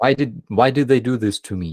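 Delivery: put-on, near-tearful voice on the verge of crying. Retelling a famous video after the villa loss: imitating Solovyov nearly crying. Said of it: "he's nearly crying".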